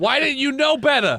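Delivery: high-pitched, forceful authoritative yelling. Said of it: "you're yelling at my friend's corpse".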